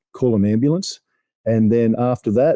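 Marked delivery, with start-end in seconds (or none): none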